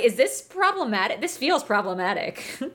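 plain

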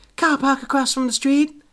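fake American accent, pitched very high. Reading a character's line aloud from a story: put-on american accent. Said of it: "weird to say in that accent".

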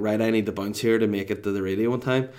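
ordinary talk, nothing marked

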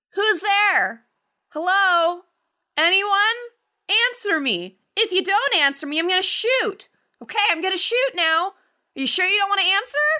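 very high calls, over and over, acted out. Retelling how a character in the film calls out into a tunnel: imitating someone calling out. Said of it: "he calls out several times".

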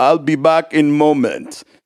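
put-on thick Eastern European accent. Retelling what the piano delivery man said, thick Eastern European accent. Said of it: "he had a thick like Eastern European accent".

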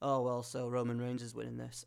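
ordinary talk

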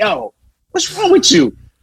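very high scream mixed with laughter. Speaker quotes two Italian cops at the window; retelling a laughing scream. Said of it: "They start screaming with laughter".

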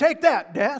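scornful taunting tone. Acting out an apostle scorning death: put-on taunting. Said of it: "he was taunting death".

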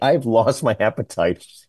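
plain

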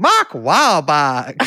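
put-on Carolina accent, not quite right. Repeating an example of an accent discussed in a recent episode, in an attempted Carolina accent. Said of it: "an extraordinary example of a Carolina accent".

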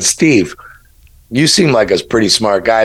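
ordinary talk

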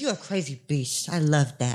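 low, soft, put-on Canadian French voice.

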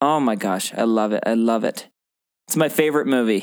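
sarcastic, insincere gushing tone throughout. Reacting to another speaker about a movie: sarcastic. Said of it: "I know you're being sarcastic there".

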